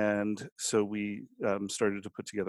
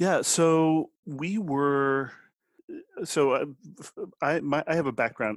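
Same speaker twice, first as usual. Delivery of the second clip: halting stuttered start, very slow, high-pitched stammer; 6 semitones higher, 6 dB louder than usual. Starting to answer how the business began, stuttering. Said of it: "I'm stuttering here".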